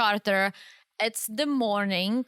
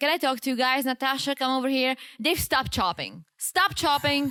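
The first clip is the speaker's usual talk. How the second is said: put-on serious and angry voice; 3 semitones higher than usual. Retelling how the boss spoke to two crew members: imitating someone serious and angry. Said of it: "she was serious and she was pissed".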